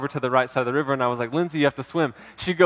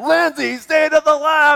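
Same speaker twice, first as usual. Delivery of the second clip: very high, slow, drawn-out yell; 13 semitones higher, 4 dB louder than usual. Retelling yelling instructions at her in the river from your inner tube: retelling yelled instructions. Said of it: "I was just yelling instructions at her".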